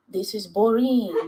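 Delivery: put-on heavy French accent. Quoting a bullying player from game nights: imitating a thick French accent. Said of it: "this man with this thick French accent say".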